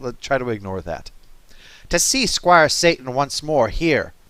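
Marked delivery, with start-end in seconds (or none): 1.9-4.1 raised, somewhat loud, put-on storybook witch voice. Reading aloud, doing the witch's line in a witch voice like Janeway. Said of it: "Whenever I do the witch voice, it comes out like Janeway".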